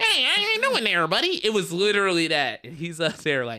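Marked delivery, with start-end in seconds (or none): 0.0-1.4 squeaky mock voice, much higher pitch. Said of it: "his was the squeaky".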